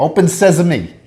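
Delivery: put-on faint touch of Italian accent. Explaining how a cartoon said the magic phrase, with a little Italian accent. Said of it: "with a little Italian accent".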